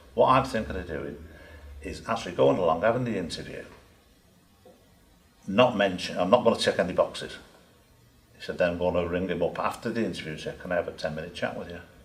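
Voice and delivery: normal talking voice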